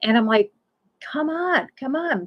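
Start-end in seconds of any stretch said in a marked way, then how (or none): 1.1-2.3 high, mock, repeated calling-out yell. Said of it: "yelling for her to come".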